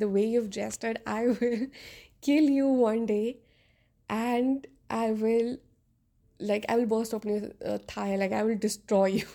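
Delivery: normal talking voice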